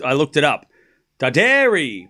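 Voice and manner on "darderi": Darderi with weight on the second syllable -der-. Correcting someone's pronunciation of a name after looking it up, stress on second syllable of Darderi. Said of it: "The emphasis is on the second syllable".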